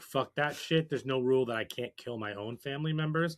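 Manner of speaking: ordinary delivery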